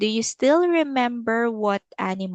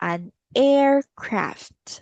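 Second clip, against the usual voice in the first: slow, careful, deliberate reading. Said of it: "Let's say it slowly".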